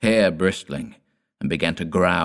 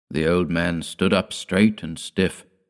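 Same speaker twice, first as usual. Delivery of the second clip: ordinary delivery, nothing marked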